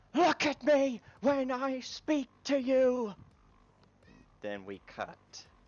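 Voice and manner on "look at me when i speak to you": shrill, drawn-out, very high, very loud scream. Recounting a scene where a robot turns toward the camera; retelling a scream. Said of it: "turns towards the camera and screams".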